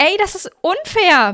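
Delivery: very high, loud bellowing yell. First-person narrator shouts after a boy who started the race early; bellowing after him. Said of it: "brüllte ich ihm hinterher".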